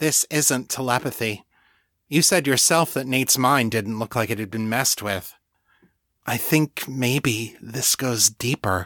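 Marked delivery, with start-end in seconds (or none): none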